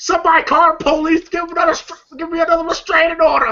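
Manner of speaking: cry in mild panic. Retelling a movie scene where a character screams: imitating someone screaming. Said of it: "you hear Day screaming".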